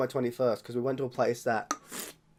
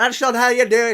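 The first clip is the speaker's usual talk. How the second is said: put-on Scottish accent, much higher, slower; 8 semitones higher, 6 dB louder than usual. Explaining how to pour, voicing an imagined Irish guy objecting, Scottish accent. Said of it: "I know that's a Scottish accent".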